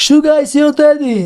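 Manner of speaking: high, mocking jeer through laughter. Retelling what a man kept saying while laughing at the speaker: retelling a laughing taunt. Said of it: "he's like laughing".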